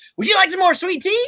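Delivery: very high, warm, condescending put-on enthusiasm. Retelling someone's over-the-top kindness, mock-enthusiastic. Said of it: "all kinds of enthusiasm".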